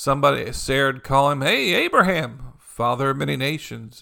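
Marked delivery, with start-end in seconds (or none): none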